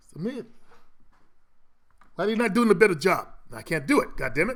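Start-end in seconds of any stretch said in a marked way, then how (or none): 0.1-3.3 put-on Indian accent in a fatherly dad voice. The speaker tries out a bit he was getting ready for: indian dad accent. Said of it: "I was gonna do an Indian dad".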